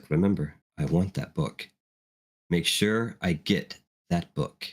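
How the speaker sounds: half-whispered, hushed, private, close to the ear. Narrating a scene, speaker voices Marilyn's parting words, Marilyn's half-whisper. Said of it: "you hear the whisper that no one else hears".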